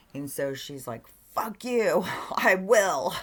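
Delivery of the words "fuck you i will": screaming, very loud, very slow and drawn out. Retelling a restaurant argument, quoting the server's reply: imitating someone screaming back. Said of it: "this screaming battle".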